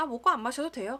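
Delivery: loud, blunt, curt, annoyed tone. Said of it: "이렇게 퉁명스럽게 얘기하셨는데".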